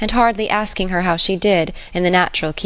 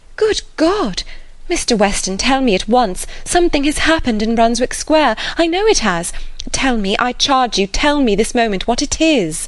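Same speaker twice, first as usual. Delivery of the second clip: urgent, terror-struck, pitched-up voice; 5 semitones higher than usual. Reading a novel, Emma speaks to Mr. Weston; terrified. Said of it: "standing still with terror".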